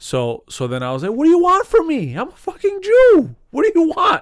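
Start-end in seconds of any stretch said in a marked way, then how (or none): 1.1-4.2 play-acted very loud, very high, swooping blurt. Retelling answering a coworker about coffee: retelling own loud outburst. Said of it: "I said it real loud".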